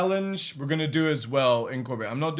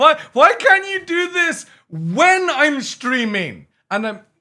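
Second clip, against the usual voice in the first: shrill, very loud, high-pitched yelling; 13 semitones higher, 10 dB louder than usual. A streamer to viewers during a hype train, shouting. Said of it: "Sorry I'm shouting".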